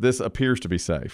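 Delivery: ordinary delivery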